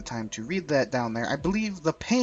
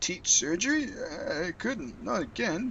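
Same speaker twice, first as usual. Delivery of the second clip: put-on elderly old man voice, pitched up; 5 semitones higher than usual. Voicing a character in a role-play scene, answering another character, in an old man voice. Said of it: "I'm gonna give him an old man voice".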